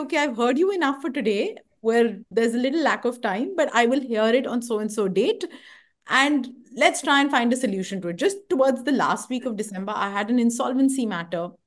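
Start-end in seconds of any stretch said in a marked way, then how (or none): none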